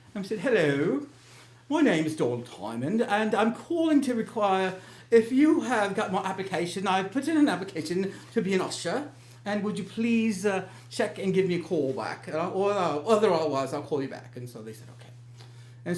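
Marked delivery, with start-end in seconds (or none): 0.3-14.3 put-on, faked British accent. Calling back about an usher application under a made-up name, in a put-on British accent. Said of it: "I'm going to use a British accent".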